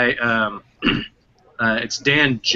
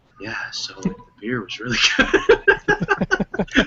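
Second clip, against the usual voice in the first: very slow, drawn-out, confiding, secretive tone; 7 semitones higher than usual. Imitating another speaker who seems to tell secrets: imitating Matt whispering secrets. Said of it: "whispering, like, secrets to me".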